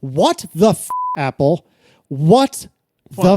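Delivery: angry, irritated. A podcast host reacting to Apple while talking with co-hosts, angry. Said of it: "Why are you angry".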